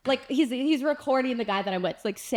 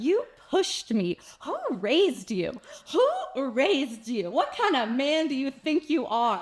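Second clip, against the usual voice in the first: mock furious, slow, drawn-out, angry berating; 4 semitones higher than usual. Recounting being pushed by a man, the speaker is retelling angry yelling at him. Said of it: "as I'm yelling at this man".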